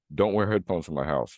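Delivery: ordinary talk, nothing marked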